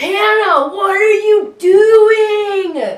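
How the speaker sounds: very loud, high, very slow drawn-out call. Doing an impression of the other speaker while cleaning, imitating partner while cleaning. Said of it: "Do your best vocal reenactment of me while cleaning".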